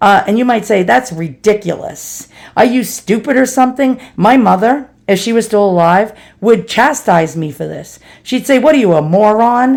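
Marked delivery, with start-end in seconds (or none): 8.6-9.8 put-on New York accent, laid on heavily. Recalling how their late mother would chastise them, imitating mother's New York accent. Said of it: "In her best New York accent".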